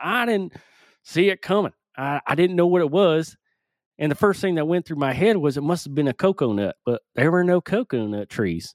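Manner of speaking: put-on Florida accent. Telling the story of being hit during a yoga class, in a stereotypical Florida accent. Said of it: "I'm just doing the stereotypical Florida accent".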